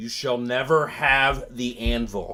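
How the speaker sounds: clearly spoken. Voicing a character who comes out, in very clear Common: very clear Common speech. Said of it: "he says in very, very clear common".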